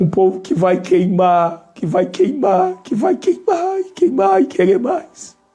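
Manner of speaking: tearful, weeping voice, crying while speaking. Addressing listeners during a spiritual message, crying while speaking. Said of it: "Eu estou chorando aqui".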